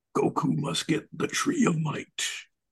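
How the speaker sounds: drawn-out announcer voice. Guessing how an old Toonami bumper sounded: Peter Cullen voice. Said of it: "the Peter Cullen voice".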